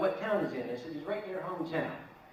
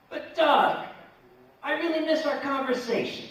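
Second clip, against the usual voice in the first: put-on Philadelphia accent, very high and loud; 9 semitones higher, 7 dB louder than usual. Reading out his own past email to a debtor: imitating a Philly accent. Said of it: "I even wrote in the Philly accent".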